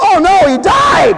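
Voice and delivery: high, loud, shocked, alarmed shouting.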